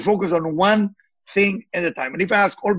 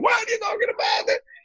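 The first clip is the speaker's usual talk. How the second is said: very high, screaming outburst. Retelling how a suffering lady screamed back: imitating someone screaming. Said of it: "she screamed at me".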